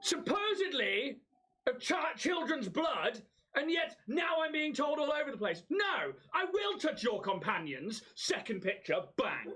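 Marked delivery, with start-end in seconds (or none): 0.0-8.0 very high petulant outburst, tantrum-like. In character as a vampire, answering a voice from a painting: tantrum. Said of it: "Ooh, tantrum".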